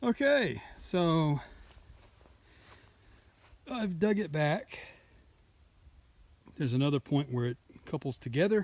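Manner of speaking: out of breath. Giving a video update after digging with pickaxe and shovel, out of breath. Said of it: "I'm a little out of breath".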